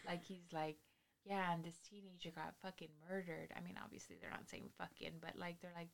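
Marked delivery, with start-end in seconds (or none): 1.2-3.5 calm, soft, soothing narrator voice. Describing a crime-story narrator to a friend; imitating the soothing narrator voice. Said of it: "his voice is just so soothing".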